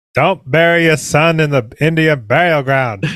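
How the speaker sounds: tentative, attempted Maine accent. Quoting Pet Sematary after doubting they can do it: attempted Maine accent. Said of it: "I don't know if I can really do it".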